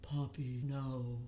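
acted very low, soft, sad, droopy, mopey voice. Mocking how the reader voices Alex, the speaker imitates his sad, mopey voice. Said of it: "He always seems sad the way she reads him".

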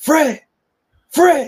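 loud, high-pitched yell. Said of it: "So I just yelled".

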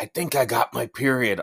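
loud stage whisper. Retelling a daughter's announcement one morning: imitating a loud whisper. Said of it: "loudly whispers".

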